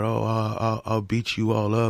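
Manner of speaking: put-on slow, mild, drawn-out ranting holler. Retelling what a man at a rally said to others: imitating someone yelling. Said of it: "he's yelling about".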